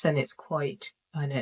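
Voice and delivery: level, monotone delivery. Explaining how some people talk, demonstrating a flat monotone voice. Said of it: "their voices often sound like this".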